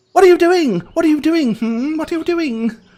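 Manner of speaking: very high, prying, inquisitive voice. Voicing a kitsune sneaking up on resting travelers: inquisitive kitsune voice. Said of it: "inquisitively looking to see why".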